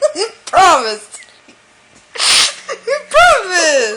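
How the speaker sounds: words through giggles, swooping sing-song. Pressing another speaker to keep a promise: laughing while talking. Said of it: "Why are you laughing?".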